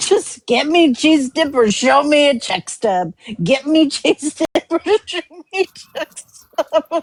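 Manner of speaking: mock half-yelled, mildly loud, said twice. Recounting the most random thing he heard someone start yelling, retelling a yell. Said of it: "start yelling".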